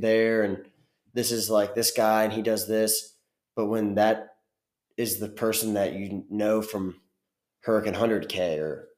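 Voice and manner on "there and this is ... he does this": ordinary talk, nothing marked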